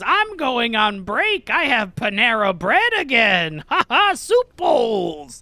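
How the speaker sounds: cackling witch voice. Game master voicing the character Gertrude answering the players, in a cackling witch voice. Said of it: "she cackles, and then she says".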